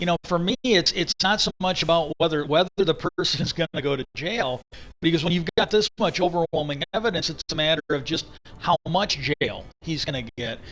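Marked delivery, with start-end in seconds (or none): none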